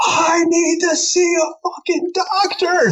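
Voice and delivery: put-on unhinged shriek at the top of the lungs, very high. Asked for a license and insurance card, retelling a full-lung scream. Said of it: "Like top of my lungs, full psychotic".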